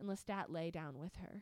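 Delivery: plain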